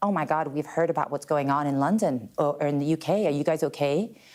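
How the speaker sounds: odd put-on American accent. A woman quotes her American husband's friends, in a weird American accent. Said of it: "she starts doing this weird American accent".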